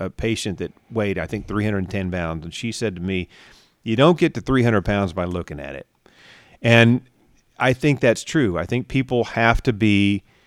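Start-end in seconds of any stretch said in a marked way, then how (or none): none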